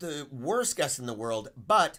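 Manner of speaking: plain reading voice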